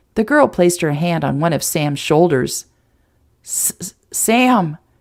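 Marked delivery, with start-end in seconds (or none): 3.5-4.7 stammering, higher pitch. Reading a story where a nervous character gives her name: stuttering. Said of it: "she stuttered".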